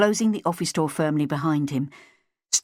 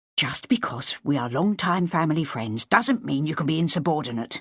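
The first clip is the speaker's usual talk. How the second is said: ordinary delivery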